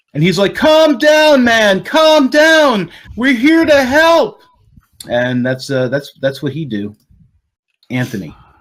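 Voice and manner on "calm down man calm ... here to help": pleading character voice, much higher and louder. A storyteller voices Jamie running out toward an angry foe, Jamie pleading. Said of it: "Jamie is pleading to his senses".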